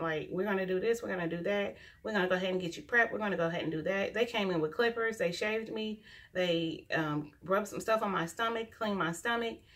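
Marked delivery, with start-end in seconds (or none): 0.3-4.1 put-on rapid, fast speech. Retelling how they rushed in before the C-section: imitating fast talk. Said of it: "they talk so fast".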